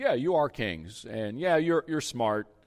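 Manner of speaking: put-on, lightly sarcastic, agreeing tone. Quoting a line from verse eight, retelling a sarcastic remark. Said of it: "Paul was a little sarcastic here".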